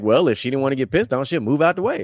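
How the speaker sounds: put-on nonchalant, casual voice. Retelling how Huey said the line: imitating Huey's nonchalant delivery. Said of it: "he said it, like, nonchalant".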